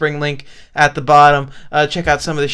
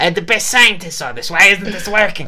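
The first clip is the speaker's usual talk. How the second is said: mocking cartoon troll voice, higher; 3 semitones higher than usual. Mocking the troll as his rock throw fails: imitating a cartoon troll. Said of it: "He throws a rock. He's like".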